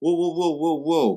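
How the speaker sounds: high-pitched, loud, excited whoa.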